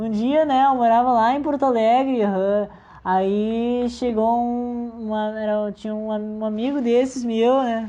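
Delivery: loud, slow, clumsy Gaúcho accent, Aí stretched. Starting a story about living in Porto Alegre, bad Gaúcho accent. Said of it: "Vou parar de falar assim, que é muito ruim. Acabei de parar o sotaque gaúcho".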